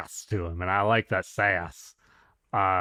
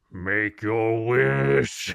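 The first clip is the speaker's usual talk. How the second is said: words stretched out long at the end. Joking about a candlelit dinner with Shenron, the speaker does a Shenron voice. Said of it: "because he's gonna be like".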